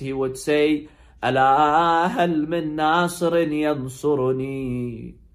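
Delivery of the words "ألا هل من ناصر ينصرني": heartbreaking voice. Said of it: "with a very heartbreaking voice".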